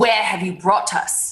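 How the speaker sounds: firm, severe, stern. A player's character walks over to a woman who hid and asks her, stern. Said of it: "kind of sternly walk over to her and say".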